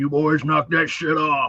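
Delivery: put-on, mean old man voice. Recalling the voice that kept the boys from running too wild, imitating Robert. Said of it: "mean old guy who tells us".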